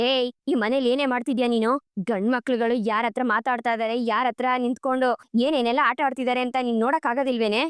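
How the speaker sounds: ordinary delivery, nothing marked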